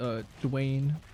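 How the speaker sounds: painfully slow, very drawn-out speech. Retelling a TV scene of a man questioned by a lawyer: imitating a very slow answer. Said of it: "very, very slowly goes".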